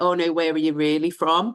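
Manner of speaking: normal talking voice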